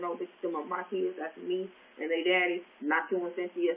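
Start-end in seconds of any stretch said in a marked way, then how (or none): none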